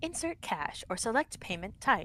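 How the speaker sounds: automated self-service machine announcement voice. A kid asks what the speaker can do; answering with the self-checkout machine voice. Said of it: "the self-checkout line voice".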